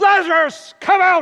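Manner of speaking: very loud, very high-pitched commanding shout. Speaker retelling John's account at the tomb, a loud commanding cry. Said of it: "He cried loudly with a mega voice".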